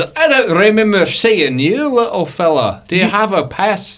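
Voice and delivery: loud, high, blaring foghorn captain voice. Voicing a ship's captain questioning a passenger: loud voice like a ship's horn. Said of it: "You sound just like the, the boat".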